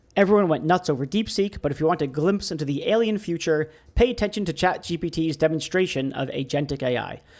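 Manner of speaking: ordinary delivery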